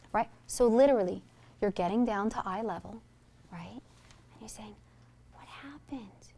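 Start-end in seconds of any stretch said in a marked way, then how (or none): 5.4-6.1 gentle, soft, hushed near-whisper. Showing how to ask a child what happened at eye level, soft tone of voice. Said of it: "use a soft tone of voice".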